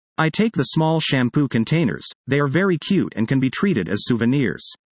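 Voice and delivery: ordinary talk, nothing marked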